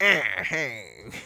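quick, offhand hey in comic film-actor voice. Imitating the actor from Rat Race: Jon Lovitz impression. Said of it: "the guy's like".

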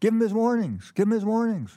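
very high-pitched screaming yell. Retelling the purse snatching, quoting Bruce at the struggling cop: imitating Bruce screaming. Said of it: "he's screaming with his arms".

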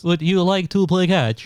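high, flat, synthesized robotic monotone, every word mechanical. Joking among laughing friends, speak to a son in a Stephen Hawking voice. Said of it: "that Stephen Hawking voice".

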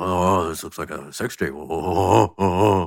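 slow, creeping sneaky voice, drawn out. Doing Seth Rogen creeping in to steal a tape: Seth Rogen impression. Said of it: "an impression of Seth Rogen creeping in".

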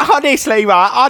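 very high, loud shriek at top of voice. Retelling what a woman said after laughing at the egg statement, retelling a shout. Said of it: "So top of her voice".

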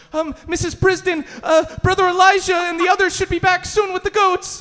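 very high, terrified, frightened voice. Voicing a frightened soldier answering a demand for goats: frightened soldier voice. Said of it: "a very frightened chosen soldier goes".

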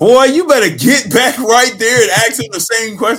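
high, loud, teasing voice.

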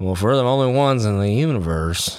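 rough, half-managed put-on Texan movie-star accent. Quoting a line from the movie Contact, in a Matthew McConaughey impression. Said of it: "Matthew McConaughey says".

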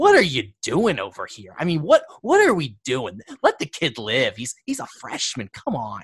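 lively, animated coach-style voice with swooping pitch. Retelling what someone said on walking over during filming: Brian Snow voice. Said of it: "In his very Brian Snow-esque voice".

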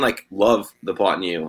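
plain

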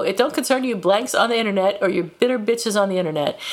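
ordinary talk

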